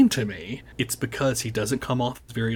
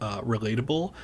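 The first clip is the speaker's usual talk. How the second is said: plain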